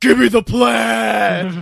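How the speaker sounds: loud, rough, rasping, very slow drawn-out drawl. Retelling a friend shopping for plaid shirts: Braun Strowman voice. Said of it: "doing the Braun Strowman voice".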